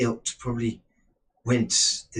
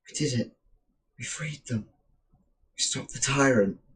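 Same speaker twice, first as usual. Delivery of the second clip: female character voice, woman's voice; 2 semitones higher than usual. A floating orb of light speaks to Sparker; woman's voice. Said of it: "which says to you in a woman's voice".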